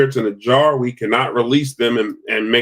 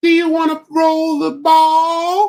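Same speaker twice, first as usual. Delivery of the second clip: sweet coaxing voice, much higher pitch. Showing how they talk during an investigation: coaxing investigation voice. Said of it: "That's how you talk when you're doing an investigation".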